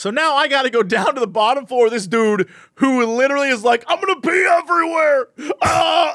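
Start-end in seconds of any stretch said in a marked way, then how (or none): 3.9-6.1 desperate man's pitched-up cry of pain, in agony. Retelling a man who rode the elevator down with the speaker, mimicking a man in pain. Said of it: "He's like in pain".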